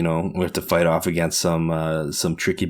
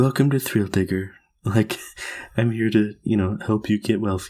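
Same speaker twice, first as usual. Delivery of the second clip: laid-back, super chill, calm, zen delivery; 4 semitones higher than usual. Showing how they voice the chill character who runs thrill digger: super zen voice. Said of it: "I always try to make him sound super zen".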